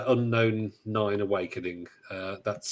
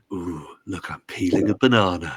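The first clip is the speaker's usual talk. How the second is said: put-on ASMR-style narrating voice, raised; 2 semitones lower, 6 dB louder than usual. A podcast host jokingly shows off, in an asmr voice. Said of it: "I could use my A S M R voice".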